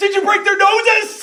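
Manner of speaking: very high, very loud, shrill gnome voice yelling. Voicing a gnome calling out to the players after a fight, yelling gnome voice. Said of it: "gnomes yells out".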